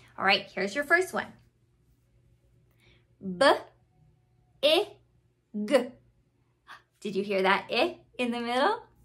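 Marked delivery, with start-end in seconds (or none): 3.2-5.9 slow, with sounds split apart. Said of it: "I say it slow like a turtle".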